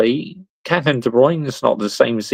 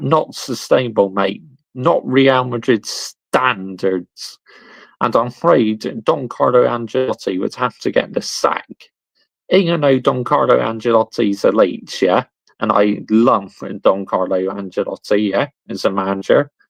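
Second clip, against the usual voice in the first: plain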